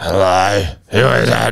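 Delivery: put-on menacing, scary intercom-style voice. Showing how the speaker always answers an unexpected late caller, in a put-on scary voice. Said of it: "I do a scary voice".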